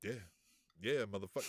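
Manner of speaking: low, stone-cold deadpan with no emotion. Retelling Ortiz's reaction while Santana laughs at the crazy guy, put-on deadpan Ortiz impression. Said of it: "Ortiz is just stone faced like".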